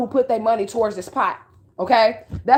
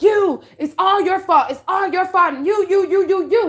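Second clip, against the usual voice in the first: slow, furious, pitched-up accusing yell, "you" drawn out; 8 semitones higher than usual. Retelling a dream where the adopted mom points at them in court, imitating someone yelling angrily. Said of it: "mama was yelling at me".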